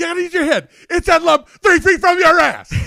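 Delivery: very loud, high-pitched shouting yell. Speaker retells a movie scene where Tom Hanks yells at his player, imitating Tom Hanks yelling. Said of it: "the scene where he's like yelling".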